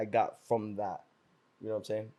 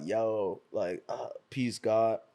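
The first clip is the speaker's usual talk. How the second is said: very slow, drawn-out, heavily mocking voice; 4 dB quieter than usual. Retelling how they made fun of a TV show: mocking the Wu-Tang TV show. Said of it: "I would do that shit to make fun of the show".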